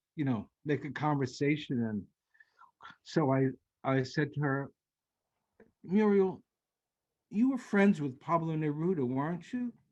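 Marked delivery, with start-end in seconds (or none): 5.9-9.8 tiny, small, high peeping little voice. Retelling what he asked the woman in the car, in a little peepy voice. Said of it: "My little peepy voice".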